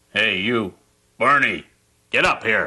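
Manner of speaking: gruff, grumpy tone, calling out. Calling another character up to talk: grumpy calling out. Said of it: "You sound so grumpy".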